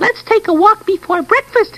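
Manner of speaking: little wee voice, very high. Telling Jerome a bedtime story, voicing the littlest bear: little, wee, tiny voice. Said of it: "in a little, wee, tiny voice".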